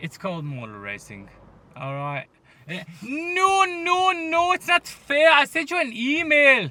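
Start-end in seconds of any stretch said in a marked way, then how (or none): 3.0-6.7 put-on very loud, very high, drawn-out German accent. Retelling what someone said to the speaker, in a german accent. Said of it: "he sounded so German".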